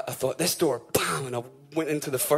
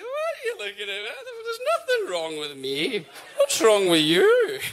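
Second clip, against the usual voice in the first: put-on very high, swooping, slightly camp drunken voice. Acting out drunk Dougie as he swings around to face you, in Dougie's slightly camp drunk voice. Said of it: "kind of like sort of camp".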